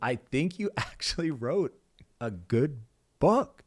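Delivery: slow, amused words through a chuckle. Retelling what dad said after hearing the book: imitating dad chuckling while talking. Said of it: "I remember he's just chuckling".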